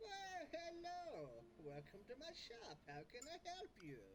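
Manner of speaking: put-on very high, slow, swooping little old man voice. Game master voices a shopkeeper greeting players from behind the counter: little old man voice. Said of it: "this little old man look around the counter and goes".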